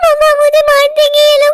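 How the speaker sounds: put-on high-pitched sobbing little girl voice. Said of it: "क्यों रो रही हो?".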